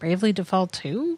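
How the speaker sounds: tentative, unsure, questioning tone. Answering when asked for a prediction: unsure, questioning tone. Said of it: "You don't sound confident".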